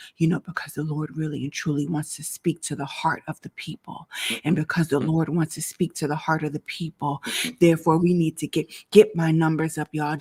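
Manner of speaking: deep, way-down voice, drawn in close. Reenacting someone begging live viewers to share: imitating someone lowering their voice. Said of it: "then they lower their voice like this".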